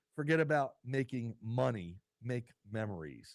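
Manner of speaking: ordinary talk, nothing marked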